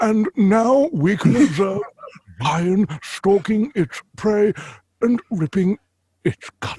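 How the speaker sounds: grand nature-documentary narrator. Showing what a proper voice for a narration should sound like: David Attenborough impression. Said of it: "it needs to sound like David Attenborough".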